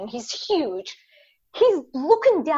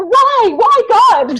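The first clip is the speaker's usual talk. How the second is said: put-on furious outburst, very high and very loud; 10 semitones higher, 11 dB louder than usual. Retelling a basketball player's complaint about slow food: imitating someone really mad. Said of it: "really mad".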